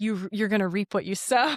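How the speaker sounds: ordinary talk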